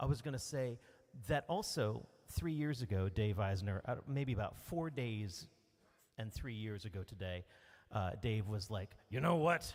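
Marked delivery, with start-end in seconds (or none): 9.1-9.7 put-on tough voice, higher and louder. Retelling what a friend said three years ago: Dave impression, tough voice. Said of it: "This is my Dave impression".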